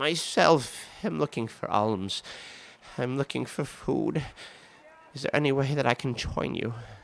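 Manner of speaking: weak, frail voice. Voicing a disguised character asking a beggar woman to join: feeble voice. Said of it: "in his most feeble voice".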